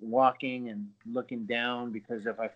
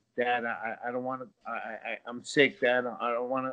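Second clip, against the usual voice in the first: put-on stuttering, stammered delivery. Retelling begging a parent to stay home from school: imitating own past stuttering. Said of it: "I was, like, stuttering".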